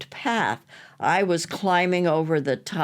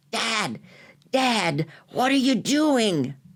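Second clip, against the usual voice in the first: stage whisper, rather loud; 5 semitones higher than usual. Retelling a daughter calling to her father: imitating a loud whisper. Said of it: "My daughter whispered to me rather loudly".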